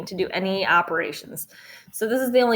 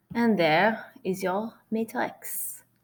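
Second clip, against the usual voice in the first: French-accented delivery; 3 dB quieter than usual. Speaker explaining calculator matrix steps slips into a french accent. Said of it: "I don't know why I'm doing a French accent".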